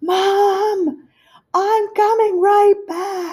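very high, shrill, slow yell, "mom" drawn out. Retelling calling to a hard-of-hearing mom in a locked stall: imitating own past yelling. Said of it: "you don't have to yell".

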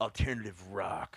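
stern straight-faced tone. Retelling how he answered a question about his band's music: imitating a stern straight-faced reply. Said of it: "Straight-faced, so stern".

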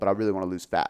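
ordinary talk

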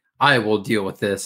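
put-on serious tone. Recounting the story after a handler speaks up, acting out Shara getting serious. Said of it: "she gets all serious and she's like".

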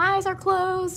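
put-on high little kid voice.

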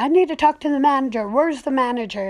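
play-acted, loud, all-out screaming outburst. Retelling an older lady demanding the manager at the front counter, reenacting her screaming. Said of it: "She was just screaming".

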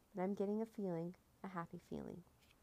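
plain

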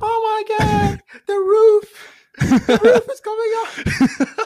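very high, very loud, squeaky little yelp. Retelling their own reaction as the roof came up: squeaky little voice. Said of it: "with my squeaky ass little voice being".

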